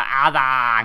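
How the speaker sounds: loud, exaggerated bellow with distorted, mangled words.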